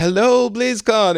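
very shy, squeaky, very high-pitched voice. Describing him showing up at BlizzCon: super shy Morhaime impression. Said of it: "in his super shy, uh, demeanor".

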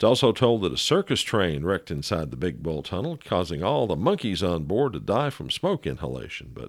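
ordinary delivery

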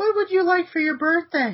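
very high-pitched put-on feminine woman voice. Told to pretend to be a woman and ask the question again, put-on woman voice. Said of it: "Now do it again".

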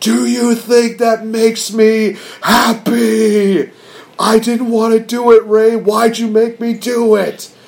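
mock, very slow, high, stretched-out scream. Retelling a wrestler's promo, screaming at a mask: imitating Eddie Guerrero screaming. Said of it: "he's just screaming at it".

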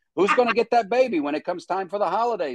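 high New York accent. Speaker acts out doting New York parents, in a New York accent. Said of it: "my accent is very much like this".

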